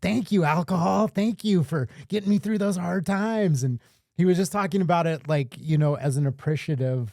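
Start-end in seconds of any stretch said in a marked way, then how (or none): 0.0-3.6 goofy, funny high-pitched put-on voice, sincerely thankful. Retelling how he thanked alcohol for past help: imitating a funny voice. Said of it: "he's got this really funny voice".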